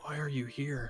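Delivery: very quiet, grizzled, worn, low-key delivery. Narrating a character who asks the players' mage why they came: quiet, grizzled voice. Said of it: "in a very quiet, grizzled voice".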